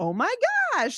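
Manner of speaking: very high-pitched exclamation. Explaining pitch, the speaker demonstrates talking up high. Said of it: "like up high?".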